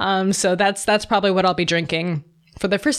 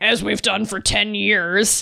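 snooty, snotty, superior know-it-all tone. Retelling own reply to an internet comment: imitating own snotty reply. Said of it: "Such a snot".

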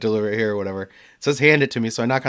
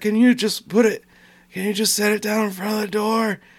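put-on old-lady voice, much higher; 10 semitones higher than usual. Speaker retelling what a customer said through the door on a delivery: imitating an old lady's voice. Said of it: "an old lady's voice through the door".

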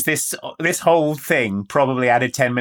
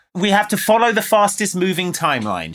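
ordinary talk, nothing marked

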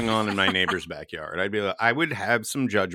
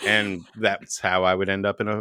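ordinary talk, nothing marked

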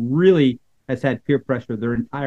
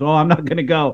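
plain

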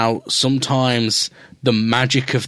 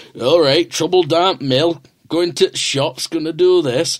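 mocking, put-on stock Yorkshire accent; 4 semitones higher than usual. Speaker mimics how people imitate him: put-on Yorkshire accent. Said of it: "they always do a fucking Yorkshire accent".

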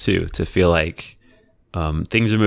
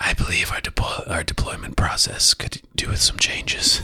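hushed whisper; 5 dB quieter than usual. Acting out the coworker who only whispers, the speaker talks in a whisper. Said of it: "Why are you whispering?".

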